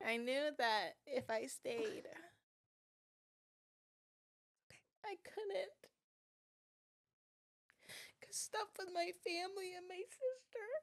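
very high, tearful crying voice. Explaining why she left home for school because of family troubles, crying. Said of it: "You do not have to apologize for tears".

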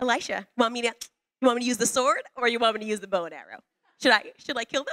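mock-keen, excited, rushed, eager delivery. Telling the story where the king of Israel asks Elisha, acting out eager voice. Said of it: "you can just hear the eagerness in his voice".

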